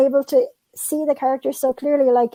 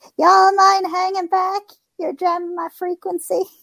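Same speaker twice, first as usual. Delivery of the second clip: small, squeaky put-on voice, pitched up; 6 semitones higher than usual. Jumping in with a line in a little squeaky voice. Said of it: "do my little like squeaky voice".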